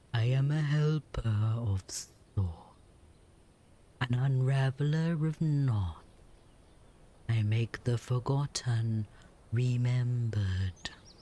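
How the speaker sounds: low, heavy, weighty snake voice, dropped down. Narrator voicing a snake with a crystal ball in a tent: low snake voice. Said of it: "The snake's voice drops low".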